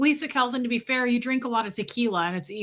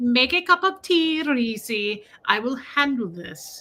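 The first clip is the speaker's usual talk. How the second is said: put-on Indian accent, higher pitch; 2 semitones higher than usual. Retelling a call about your bill, quoting the agent Sean in an Indian accent. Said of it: "a sweet Verizon man who was from India".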